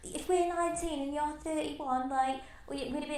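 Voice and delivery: put-on Australian accent. Quoting what a woman said to them, in an Aussie accent. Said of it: "that's my Aussie accent".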